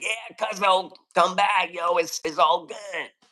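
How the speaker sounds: rough, very raspy, slow voice. Retelling a crew member's reply that invites the speaker back: imitating Muggsy's raspy voice. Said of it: "Muggsy has a very raspy voice".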